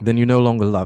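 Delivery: put-on English accent. Acting Scrooge's breakup scene with Belle: Scrooge in put-on English accent. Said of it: "I'm going to try an accent for this one".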